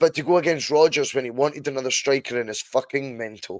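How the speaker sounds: usual speaking voice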